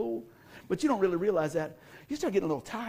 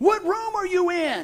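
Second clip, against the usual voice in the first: very high, shrill, screamed delivery; 10 semitones higher, 6 dB louder than usual. Retelling how the pool manager with the cigar started screaming, retelling a scream. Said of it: "he starts screaming".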